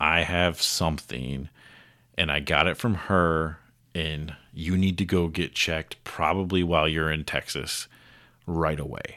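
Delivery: normal talking voice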